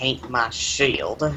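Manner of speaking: soft mutter under the breath. Voicing a character who catches a shield and mutters: muttering. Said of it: "just mutters".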